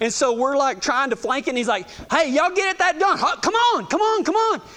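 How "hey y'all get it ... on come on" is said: high-pitched, pressing yelling. Telling a story about a past job, acting out how the boss barked at the crew, imitating someone yelling. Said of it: "he's yelling".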